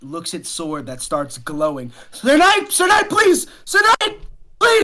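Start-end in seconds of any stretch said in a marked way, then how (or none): 2.1-4.8 very high, loud, desperate begging voice. Voicing a Conqueror begging the knight attacking him: pleading NPC voice. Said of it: "pleading at you".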